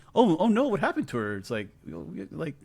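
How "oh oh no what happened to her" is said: very high, big overacted shock. Mocking how an actress reacts in a scene: imitating Dakota Johnson acting shocked. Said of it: "Dakota Johnson's acting like she's so".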